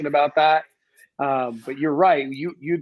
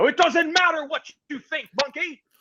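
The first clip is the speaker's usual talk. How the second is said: very high, dismissive, tossed-off taunt; 14 semitones higher than usual. Imagining a celebrity answering a debate question: The Rock impression. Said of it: "and he would go".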